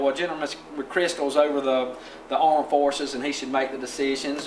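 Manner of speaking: ordinary talk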